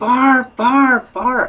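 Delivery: repeated, very high-pitched screams. Retelling how a flight attendant screamed his name during a race, imitating someone screaming. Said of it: "she starts screaming".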